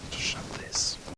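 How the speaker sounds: soft speech. Leaving after finding everyone already back to normal: quietly.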